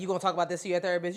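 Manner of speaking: put-on teasing voice. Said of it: "My mom will really be like".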